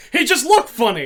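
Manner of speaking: put-on Yiddish-accented speech.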